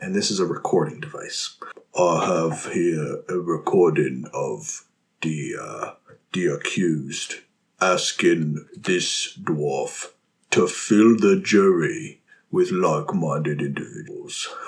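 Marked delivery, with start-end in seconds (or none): 2.0-14.5 put-on British accent, like a barrister. Voicing a bruised Gogoloth addressing the court judge: British accent. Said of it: "He sounds British".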